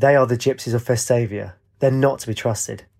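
ordinary delivery, nothing marked

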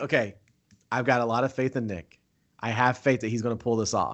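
ordinary delivery

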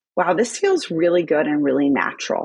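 ordinary talk

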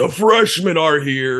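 big, booming, bellowing, loud high-pitched shout. Retelling how Tim Frawley flung the door open: retelling Tim Frawley's booming shout. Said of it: "and just shouts".

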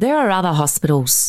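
ordinary delivery, nothing marked

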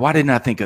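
ordinary talk

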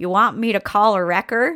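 put-on Nebraska accent. Retelling a state patrolman's question after the car hit a deer: imitating the patrolman's accent.

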